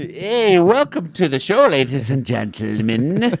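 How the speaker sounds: loud, high, poor put-on Irish accent. Opening a podcast, a host welcomes listeners in a bad fake Irish accent. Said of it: "I don't know how to do Irish".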